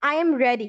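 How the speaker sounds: pitch falls at the end of the word ready. Teaching statement intonation with I am ready, falling intonation on ready. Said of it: "यहाँ पे हमारा टोन falling रहेगा".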